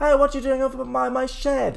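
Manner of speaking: calling out from far off. A young woman calls out to someone near her shed, shouting from a distance. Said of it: "Hear a voice from someone shouting".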